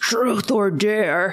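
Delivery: put-on, sinister demonic voice. Retelling a film scene at a gas station: put-on demonic voice. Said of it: "a demonic voice says".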